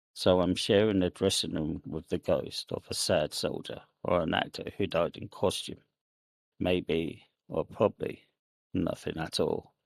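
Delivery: ordinary delivery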